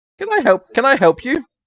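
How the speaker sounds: thin, whistling voice, very high-pitched. A stooping man behind a counter greets someone entering, high-pitched whistly voice. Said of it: "you hear a high pitched whistly voice".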